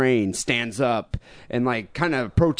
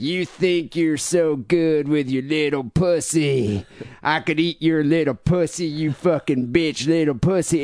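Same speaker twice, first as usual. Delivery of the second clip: mock drunken yelling, higher pitch; 3 semitones higher than usual. Retelling a drunk man on a train yelling at a passenger: imitating a drunk man screaming. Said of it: "and he's just screaming".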